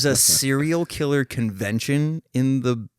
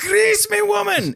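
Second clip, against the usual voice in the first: put-on Scottish accent, pitched way up; 3 dB louder than usual. Retelling a scene where he rips his clothes off, in Groundskeeper Willie's voice. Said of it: "I could do this voice".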